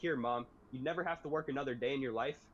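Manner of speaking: ordinary delivery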